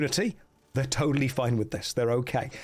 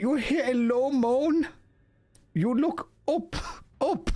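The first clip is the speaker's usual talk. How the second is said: bad, high-pitched, slow, mock Indian accent. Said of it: "That was the Indian again happening".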